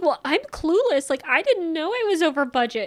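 upset, flustered, high-pitched emotional protest. Retelling how a show participant reacted to being over budget: imitating someone getting emotional. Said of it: "she gets immediately emotional".

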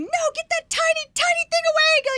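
very high, very loud, top-of-lungs shriek. Retelling her own earlier reaction, re-enacting a scream. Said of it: "And I'm like screaming".

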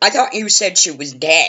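mock frantic yell, fast, high, words tumbling out. Retelling a frantic man hollering at a doctor in the hallway: retelling a man hollering. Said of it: "he was hollering".

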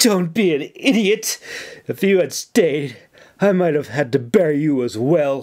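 gasped through sobs. Held by a weeping man, a woman answers him, gasping while sobbing. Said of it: "she gasped, sob".

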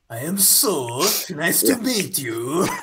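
put-on poor, slow Spanish accent. Voicing the game character Soth again: really bad Spaniard accent. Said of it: "a really shitty, like, Spaniard accent".

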